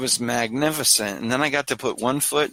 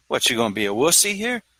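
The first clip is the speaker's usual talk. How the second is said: speaking with a New York accent. Pep-talking oneself to conquer fear, in a New York accent. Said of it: "I do it in a New York accent when when I'm trying to conquer fear".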